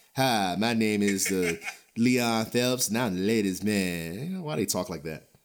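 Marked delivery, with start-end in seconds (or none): 0.2-4.5 thick-tongued voice, lower and slower. Wondering why people talked like that, doing a Leon Phelps impression, thick-tongued. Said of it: "talk like their tongue is too wide".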